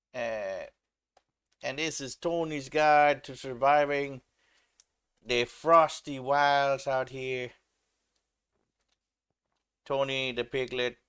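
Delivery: bad put-on Italian accent, loud and high. Presenting a cold wonderland scene to viewers, in a shitty Italian accent. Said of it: "I was trying to do like a a shitty Italian accent".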